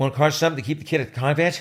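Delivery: fast, loud, rapid-fire, rattled off in one breath. Showing how a line sounds when said quickly, spoken very quickly. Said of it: "if you say it really fast".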